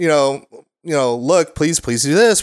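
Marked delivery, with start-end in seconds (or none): 1.1-2.4 put-on very calm speaking. Imitating a wife calmly telling a child what to do at bedtime: imitating someone speaking very calmly. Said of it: "very calmly try to say".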